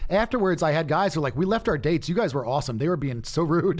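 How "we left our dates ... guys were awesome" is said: ordinary talk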